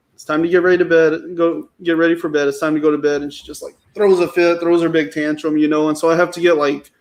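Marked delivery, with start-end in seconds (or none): none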